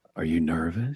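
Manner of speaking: dropped very low into a deep rumble. Retelling what he said to a man watching highlights before his first SportsCenter: deep voice. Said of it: "in that deep voice where I go".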